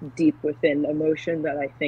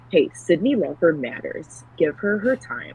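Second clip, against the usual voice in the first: slow, over-the-top, flamboyant delivery; 2 semitones higher than usual. Retelling what a dude in the audience turned around and said: imitating a flamboyant voice. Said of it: "in the most flamboyant voice you can think of".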